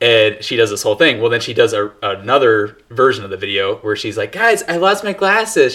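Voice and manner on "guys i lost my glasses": pitched-up, high cartoon-style voice. Retelling a TikTok of a girl crawling around looking for glasses: Velma voice. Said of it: "does a Scooby-Doo impression of Velma".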